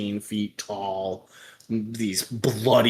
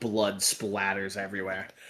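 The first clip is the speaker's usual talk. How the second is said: ordinary talk, nothing marked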